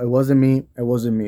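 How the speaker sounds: ordinary talk, nothing marked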